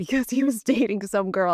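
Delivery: words broken up by laughing throughout. Telling other speakers why an old colleague came back: laughing while talking. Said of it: "I can't even say it without laughing".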